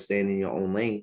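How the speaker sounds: ordinary delivery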